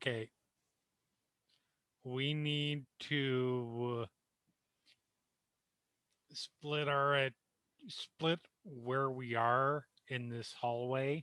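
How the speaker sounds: low-volume, hushed, quiet delivery. Speaking in character to a companion about a plan: speaking quietly. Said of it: "I'm gonna say quietly to Nico".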